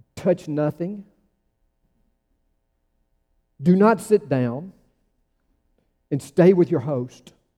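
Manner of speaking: put-on curt, clipped, crisp British accent. Retelling a library visit, the speaker quotes the librarian in a clipped British accent. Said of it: "in her clipped British accent".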